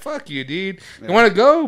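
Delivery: mouthy, sassy preteen voice, high pitch. Retelling how a ten-year-old talks back: imitating a preteen giving attitude. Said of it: "Motherfuckers give me attitude already".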